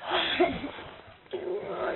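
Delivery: quiet, slow whisper.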